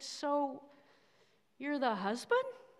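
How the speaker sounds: play-acted very tentative, unsure, careful tone. Retelling a puzzled woman's question to the speaker; imitating a tentative voice. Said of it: "in a very tentative voice".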